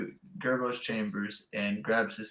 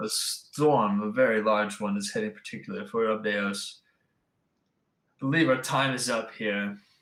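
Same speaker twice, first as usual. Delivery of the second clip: put-on British accent unintentionally creeping in; 4 dB louder than usual. Speaking in character about an approaching storm, slipping into a British accent. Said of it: "I also think I've grown an accent".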